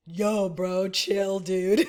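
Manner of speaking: laid-back surfer dude voice. Asked about the pace of a work environment, picturing a surfer dude voice. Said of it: "I'm just thinking like the surfer dude".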